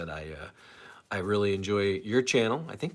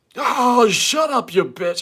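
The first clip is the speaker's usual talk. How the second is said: very high, very loud, badly done put-on drunk voice; 11 dB louder than usual. Trying to recall how Artie did him, attempt a bad Jeff the Drunk impression. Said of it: "impression of Jeff the drunk".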